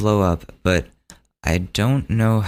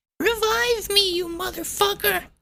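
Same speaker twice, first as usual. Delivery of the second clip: put-on very high, small little kid voice; 4 dB quieter than usual. Retelling a kid yelling on the mic from the tv room, little kid voice. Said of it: "you just hear this little kid".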